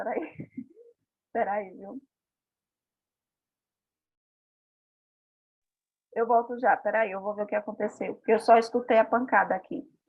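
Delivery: worried, anxious and on edge. Speaker hears her son fall mid-talk and steps away, nervous. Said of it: "eu tô nervosa".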